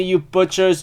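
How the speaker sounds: normal talking voice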